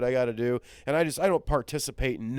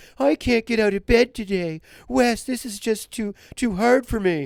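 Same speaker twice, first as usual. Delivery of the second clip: mocking put-on voice, shrill and very high; 9 semitones higher, 6 dB louder than usual. Retelling how a man voices someone who can't get out of bed, in a put-on voice. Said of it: "He does this voice".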